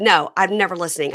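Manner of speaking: ordinary talk, nothing marked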